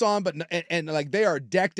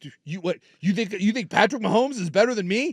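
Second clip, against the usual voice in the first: mock indignant, outraged, sputtering, tripping over words; 4 semitones higher than usual. Retelling what the flag football quarterback said: imitating an outraged quarterback. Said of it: "he was outraged 'cause he was like".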